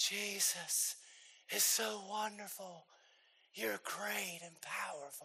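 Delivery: very hushed, intimate, soft, slow bedroom voice. Speaker imitates their worship leader on stage, imitating a bedroom voice. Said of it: "talking in her bedroom voice".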